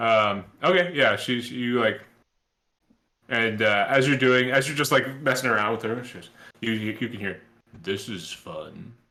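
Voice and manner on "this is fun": very deep, soft archdemon voice. Game master voices a summoned archdemon as the players mess with her; very deep archdemon voice. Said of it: "a very deep and uh, you know, deep voice".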